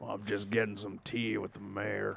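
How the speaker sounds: rough, creaky character voice. Joking about wearing a top hat to tea with the mayor: Arthur Morgan voice. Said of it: "That's my Arthur Morgan".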